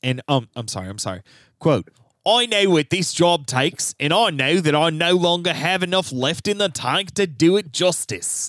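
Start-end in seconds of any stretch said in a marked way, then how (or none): 2.2-8.5 put-on New Zealand accent. Quoting a prime minister's resignation words, imitating Jacinda Ardern in a New Zealand accent. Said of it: "It was actually wasn't a bad accent".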